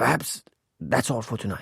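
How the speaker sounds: rasping, hoarse, raspy voice. Reading a story aloud, voicing an exhausted doctor ending a demonstration: hoarse voice. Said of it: "In a hoarse voice".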